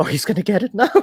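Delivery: very high voice, giggling through the words. Voicing a giggling onlooker in a game scene: giggling under her breath. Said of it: "under her breath, just going like".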